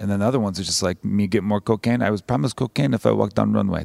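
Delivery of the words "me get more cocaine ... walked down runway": lousy, fake Russian woman's accent. Speaker imitates runway models for listeners, in a shitty Russian woman impression. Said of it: "That's like my shitty Russian woman impression".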